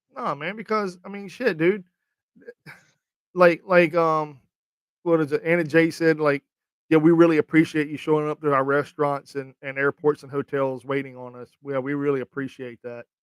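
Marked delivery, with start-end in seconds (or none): none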